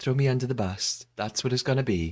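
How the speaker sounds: deadly serious, grave delivery. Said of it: "she's deadly serious".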